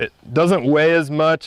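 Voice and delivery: normal talking voice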